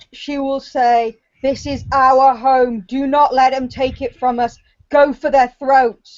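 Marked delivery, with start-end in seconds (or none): 1.4-5.9 snarling, growled, fierce war cry. A game player saying their character's words aloud at the table, growling. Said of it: "is growling out".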